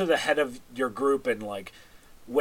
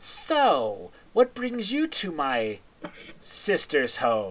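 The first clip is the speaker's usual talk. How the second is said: put-on crackly, enthusiastic, eager old woman crone voice. Narrating to the party, the speaker voices a character greeting them, crackly but enthusiastic. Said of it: "you hear a crackly but enthusiastic voice".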